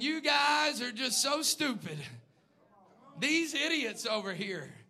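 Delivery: put-on mocking, taunting laughter. Imagining a man taunting the worshippers of false gods, acting out laughing mockery. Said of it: "Probably laughing his head off at them".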